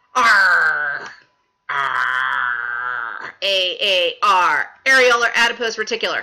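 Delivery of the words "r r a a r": very low, very slow, drawn-out put-on pirate voice. Going over the loose connective tissues, pretending to talk: pretend pirate talk. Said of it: "I'm going to think of this like a pirate".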